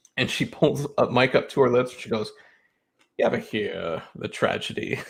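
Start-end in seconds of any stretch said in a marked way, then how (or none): 3.2-5.0 put-on old English man's accent. Retelling a scene where a girl mimics an old English man's accent. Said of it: "an old English man's, um, accent".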